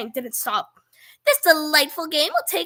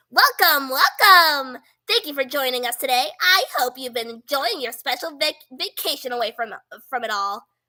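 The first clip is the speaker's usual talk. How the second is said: put-on cartoonish character voice; 2 semitones lower than usual. Retelling a scene where a different voice announces, Monokuma voice. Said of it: "Let me do my Monokuma voice".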